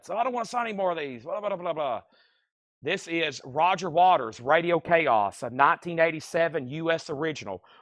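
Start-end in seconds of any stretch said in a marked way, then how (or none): 0.1-2.0 put-on complaining old rocker voice. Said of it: "my impersonation of [name] complaining about signing box sets".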